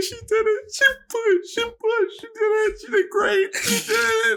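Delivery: mock very high crying, overjoyed tearful gushing babble. Retelling a phone call after the birth: imitating himself crying on the phone. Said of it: "we're crying on the phone".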